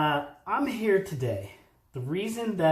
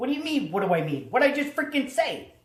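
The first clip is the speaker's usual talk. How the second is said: put-on Philadelphia accent, higher and faster; 8 semitones higher than usual. A low voltage electrician acts out a friend's comeback, philly electrician way of talking. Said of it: "if I was a real electrician in Philly, I would talk like this".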